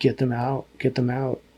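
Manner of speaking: usual speaking voice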